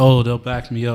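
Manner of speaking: usual speaking voice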